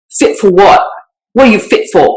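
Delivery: put-on heavy UK accent. Recalling a professor's lecturing catchphrase, doing Tony Leland's thick accent. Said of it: "this thick accent".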